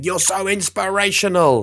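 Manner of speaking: very high, excited cheering shout. Recounting standing up with arms in the air to praise a man, retelling a shout. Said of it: "just shouting".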